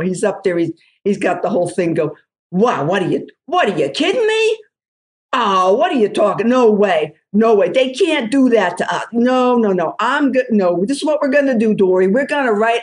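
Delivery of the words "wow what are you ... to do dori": thick New Jersey accent, higher and slower. Showing that their old accent comes back in a heartbeat, thick New Jersey accent. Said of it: "my New Jersey accent ... can come back in a heartbeat. So here you go".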